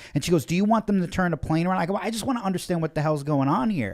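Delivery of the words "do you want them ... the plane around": hostile, combative, confrontational, aggressive female voice. Retelling an argument on a plane, imitating the woman pointing at him, mock-aggressive. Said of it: "she's so aggressive".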